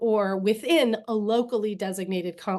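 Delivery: ordinary talk, nothing marked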